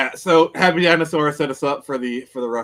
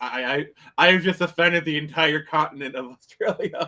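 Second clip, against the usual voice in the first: plain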